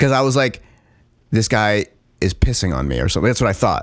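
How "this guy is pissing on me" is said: ordinary talk, nothing marked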